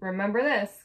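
ordinary delivery

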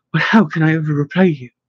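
usual speaking voice

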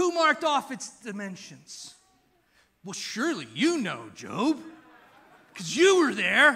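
loud, swooping, heavy put-on sarcasm, needling. Retelling God's questions to Job, acting out God's sarcasm. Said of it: "He gets really sarcastic".

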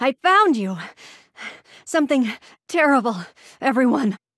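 panting, breathless, out of breath. A character who just ran here, announcing to everyone, panting and out of breath. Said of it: "Why are you panting so hard?".

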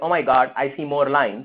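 usual speaking voice

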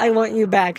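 normal talking voice

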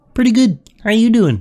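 well-done cartoon frog puppet voice. On Omegle, answering a stranger who greeted him as Kermit, in Kermit the Frog voice. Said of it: "You got the voice down".

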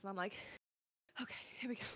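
winded and gasping. Describing rushing back from the toilet with seconds to spare, acting out being out of breath. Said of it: "I'm out of breath".

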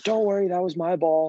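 high, loud yell called out.

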